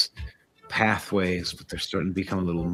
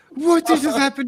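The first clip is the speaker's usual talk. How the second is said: panicking, higher and louder; 7 dB louder than usual. Voicing Crom reacting to a sudden splash: freaking out. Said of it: "Crom freaks out".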